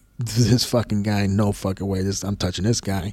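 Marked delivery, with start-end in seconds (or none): none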